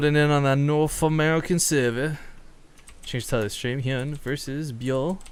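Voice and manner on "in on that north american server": attempted, failed put-on British accent. A streamer reads out a line, in an attempted British accent. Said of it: "say that with a British accent?".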